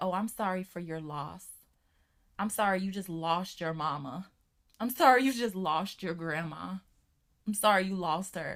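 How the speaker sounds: rote, hollow, insincere, empty sympathetic tone. Imitating people who offer condolences after a death: mocking insincere condolences. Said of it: "it never sounds sincere for me".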